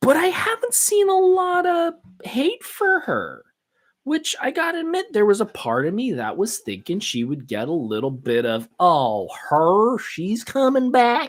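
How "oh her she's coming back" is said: lazy, slow, put-on southern drawl. Voicing an expected fan reaction to her return, in a southern accent. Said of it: "I don't know why I went to a southern accent".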